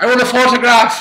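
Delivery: put-on shrill, loud, shouted Irish accent. Speaker in bed retells a visitor asking for a photograph, in a Louis Walsh Irish accent. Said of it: "That's my Irish accent".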